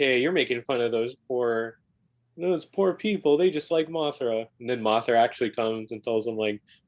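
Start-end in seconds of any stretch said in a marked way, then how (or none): none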